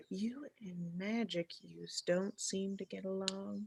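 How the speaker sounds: barely audible, very quiet mutter under the breath. In a roleplay meeting, a character speaks to another muttered under the breath. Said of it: "kind of under my breath".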